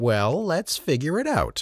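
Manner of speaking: slightly condescending. A man answers the narrator, a programmer, slightly condescending. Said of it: "he said in a slightly condescending tone".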